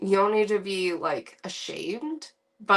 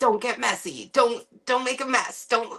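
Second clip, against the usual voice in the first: fretful, neurotic, fussy nagging tone; 3 semitones higher than usual. Retelling own past words to kids about mess: imitating a neurotic fussing parent. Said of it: "I totally can be that neurotic person".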